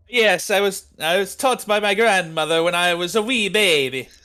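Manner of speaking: put-on loud, high-pitched Irish accent. Voicing the NPC Luigi answering about a family recipe: Irish-accented Luigi voice. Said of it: "This Irish fucking Luigi".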